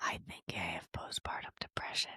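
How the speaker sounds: hushed whisper. Retelling a first admission, whispered just like back then. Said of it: "basically whispered it like that".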